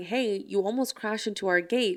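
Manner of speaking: ordinary delivery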